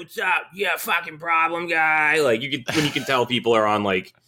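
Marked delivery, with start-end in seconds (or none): 0.0-2.2 put-on drugged-out old man voice, much higher. Describing an old man, imitating his opiate voice. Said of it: "he had the opiate voice".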